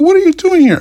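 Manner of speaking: very high, loud, mocking rude woman voice. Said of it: "She's like".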